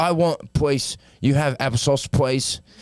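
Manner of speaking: put-on British grown man's baby talk. Joking about an actor's daring role, ordering food in a big british baby voice. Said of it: "He's like a big baby".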